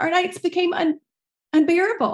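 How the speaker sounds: fighting back tears. Telling of a child's sudden change at home, holding back tears. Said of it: "I'm trying not to cry".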